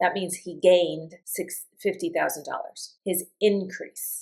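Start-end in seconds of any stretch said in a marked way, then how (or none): 3.0-4.2 increase said INcrease, stress on in. Example with increase as a noun: stress on IN of increase. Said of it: "I've put the, put the, um, accent on the in".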